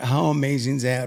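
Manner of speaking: ordinary talk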